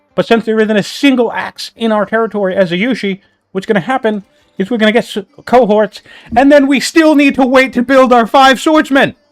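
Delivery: all-out, high, excited shouting. Explaining the swordsmen timing to the viewers and Nestor, shouting. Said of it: "I'm just shouting".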